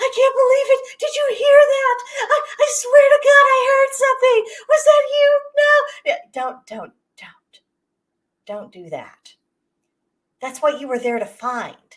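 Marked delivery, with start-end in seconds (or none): 0.0-6.9 put-on panicked screeching, higher and louder. Mocking YouTube ghost hunters reacting to a noise, imitating panicked screeching. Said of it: "Don't screech and panic".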